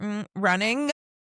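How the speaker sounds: the word "running" strongly emphasized. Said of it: "put emphasis on that word".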